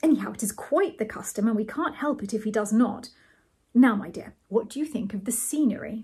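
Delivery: plain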